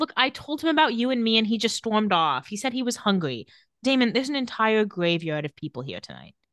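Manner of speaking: ordinary talk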